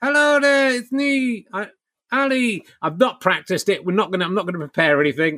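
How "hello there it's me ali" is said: dummy voice, pitched much higher. Streamer introducing the ventriloquist dummy to Twitch viewers, Ali the dummy voice. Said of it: "with my terrifying ventriloquist dummy".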